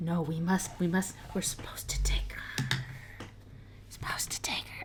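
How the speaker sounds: feeble menacing whisper that falls flat. Speaker retells a man's reply, imitating a failed menacing whisper. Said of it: "he's like whispering and like trying to be menacing".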